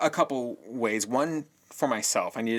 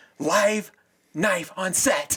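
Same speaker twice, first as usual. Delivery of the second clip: very slow, high, drawn-out, full-volume scream; 9 semitones higher, 5 dB louder than usual. Retelling how a crew member announced a knife: imitating a scream. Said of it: "He screams at the top of his voice".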